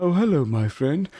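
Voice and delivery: put-on old-man voice, pitched high. Voicing the old robed man as a hero leaps at him: old man character. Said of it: "as you kind of leap towards this old man, the eyes roll and goes".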